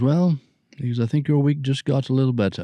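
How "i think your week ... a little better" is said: clumsy, poorly done put-on English accent. Retell what he answered when you said you had booked your first movie, in a bad English accent. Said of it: "It's a bad English accent".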